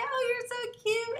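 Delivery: put-on high-pitched baby talk. Explaining speech-language therapy, demonstrating high-pitched baby talk. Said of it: "we go up highly to say".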